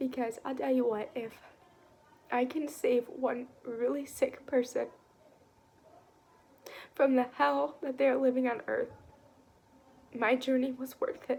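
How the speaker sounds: tearful, crying while speaking. A speaker who was sick for six years, addressing listeners, crying while speaking. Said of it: "I'm sorry that I'm sitting here crying".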